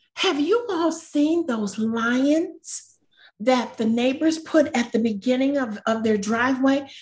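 high put-on woman's voice.

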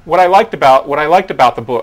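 yelling, loud and high-pitched.

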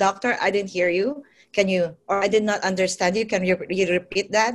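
ordinary delivery

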